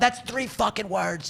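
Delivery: put-on furious scream. Parent retelling a fight with their son, retelling screaming at his son. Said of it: "just screaming".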